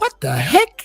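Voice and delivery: fake, very high-pitched put-on voice. Answering a request to say the catchphrase: put-on really high voice. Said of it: "make your voice, like, really high".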